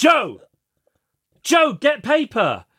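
mock very high, swooping, shouted yell. Retelling a mom yelling at the dad, the speaker imitates someone yelling. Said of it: "Sarah's mom is yelling at her dad".

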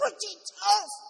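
shrill, very high, loud screaming. Retelling how a son screamed at the speaker: imitating a scream. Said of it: "my son screamed at me".

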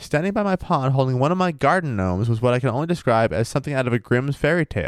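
plain

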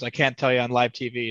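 ordinary talk

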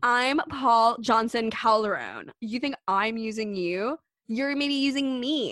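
play-acted offended tone. Retelling paul's answer when accused of using someone as arm candy, mock-indignant retort. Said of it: "indignant retort in retold argument".

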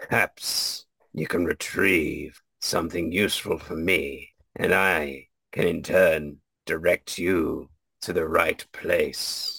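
ominous, menacing, dark voice. Voicing the dark forces of a temple bargaining with a player: ominous voice. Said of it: "oh ominous voice".

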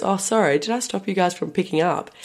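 put-on calm tone. Retelling what Dad said while walking in front of them: imitating Dad's calm remark. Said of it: "Calm about it as well".

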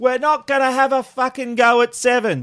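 high-pitched screaming in a taunting tone. Retelling what a man waiting at his office door shouted at him, retelling a scream. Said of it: "he screams out to me".

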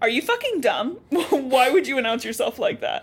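harsh, blunt scolding, no sugarcoating. Retelling how a character scolds another for announcing himself: imitating a harsh telling-off. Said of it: "Six puts it to him real".

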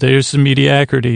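ordinary delivery

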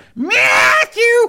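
very high calling voice. Retelling how a friend's mum answered the phone: imitating a mum calling out a name. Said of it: "And then she'd go".

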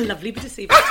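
put-on loud, fast Welsh accent.

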